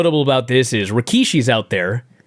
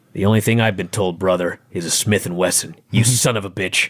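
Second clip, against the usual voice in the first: put-on muttering voice, lower pitch; 6 semitones lower than usual. Retelling a poker scene, quoting Farouk: imitating Farouk under his breath. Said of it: "practically under his, under his breath".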